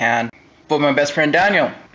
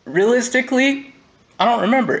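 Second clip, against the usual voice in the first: choked-up voice, much higher pitch. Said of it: "I'm getting a little choked up here".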